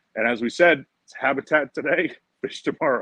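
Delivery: words broken up by giggling laughter. Speaker inviting viewers to the YouTube channel, laughing while talking. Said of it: "Sorry, I'm laughing".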